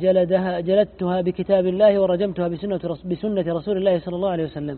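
ordinary talk

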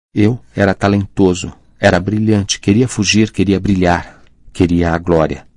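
ordinary delivery, nothing marked

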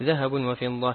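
ordinary talk

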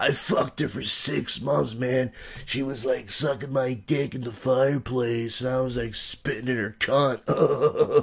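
ragged, raspy smoker's voice, drawn out. Retelling what a man said to him, raspy voice impression. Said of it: "he has this really raspy voice".

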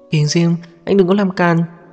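high, frightened, scared cry. Luli cries out to Kình Diêm; crying out in fear. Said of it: "Luli sợ hãi kêu lên".

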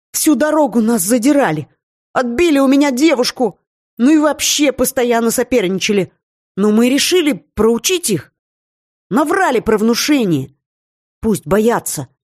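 high, scared, rapid, frightened gabbling. A frightened student, pointing at his rivals, gabbling in fear. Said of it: "со страху затараторил".

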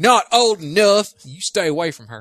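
put-on country bumpkin accent. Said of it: "all of a sudden all pedophiles are country".

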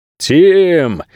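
high, jerky, drawn-out shout with stretched word. Reading a thriller, a man calls out for his partner who does not answer: shouting in a jerky voice. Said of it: "кричал дерганным голосом напарник".

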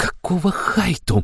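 hissing, high-pitched voice. Narrating a priestess being hustled out the door by a man, hissing. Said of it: "прошипела Аштира".

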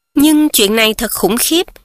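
plain reading voice

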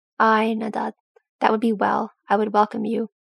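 ordinary delivery

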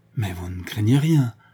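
alarmed, panicking. A woman questions a man about someone who failed to show up: panicking. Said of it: "qui s'affolait déjà".

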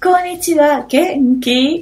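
high-pitched synthesized computer reading voice. Retelling a scene where a computer reads lines aloud, imitating the computer's voice. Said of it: "con esa voz como".

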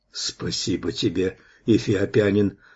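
ordinary delivery, nothing marked

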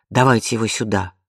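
plain

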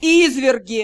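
openly mocking drawl, drawn out. The lord-director taunts frightened mages, openly mocking, drawn out. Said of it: "Откровенно издеваясь, протянул Риан".

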